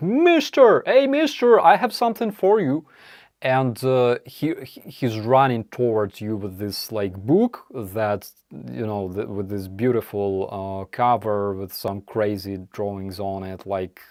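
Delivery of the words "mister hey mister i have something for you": shrill, very high, screamed cry. Retelling how a street seller screams at people walking by: imitating a street seller screaming. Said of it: "this guy screams at you".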